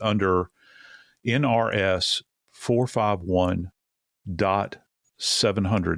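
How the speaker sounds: deliberate, broken-up, very slow halting reading. Reading a Nevada code section aloud to Dave, saying the reference very slowly. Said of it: "I'll say it very slowly".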